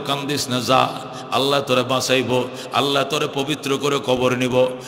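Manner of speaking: gently spoken, soft and low. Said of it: "আল্লাহ নবী কো".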